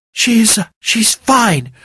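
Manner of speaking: shaky, trembling voice. Narrator reading a character's answer in a story, shaky voice. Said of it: "Willow said in a shaky voice".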